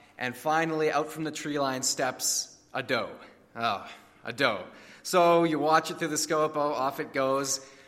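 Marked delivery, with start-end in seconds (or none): none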